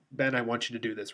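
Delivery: ordinary delivery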